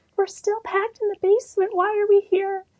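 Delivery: high, spooky voice.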